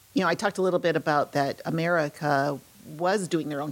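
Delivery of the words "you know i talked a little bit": usual speaking voice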